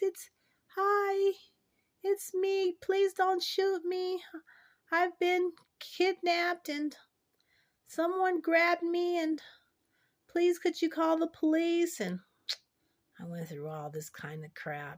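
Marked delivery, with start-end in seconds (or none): 0.0-12.0 small, very high, raised little voice. Retelling calling out to a man with a shotgun after being kidnapped, in a little voice. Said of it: "And I said in my little voice".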